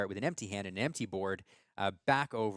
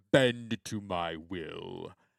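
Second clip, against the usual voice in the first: very slow put-on villain voice, every word drawn out; 2 semitones lower, 4 dB louder than usual. Asked for their best impression, says a line in a Jafar voice. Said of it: "that was an impression of Baker doing a Jafar impression".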